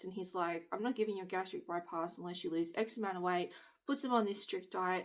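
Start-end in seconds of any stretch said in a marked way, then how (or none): none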